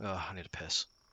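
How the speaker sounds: soft, half-swallowed mutter under the breath. Playing a character who wanders off: muttering under his breath. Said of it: "just mutter under his breath as he starts walking off".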